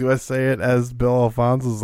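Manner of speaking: normal talking voice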